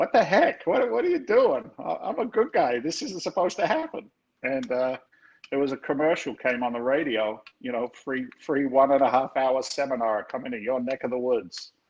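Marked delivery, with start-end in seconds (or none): 0.0-4.1 play-acted very high, wildly swinging, swooping outraged yell. Retelling screaming at him after doing everything he was supposed to, retelling a scream. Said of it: "and I'm screaming at him".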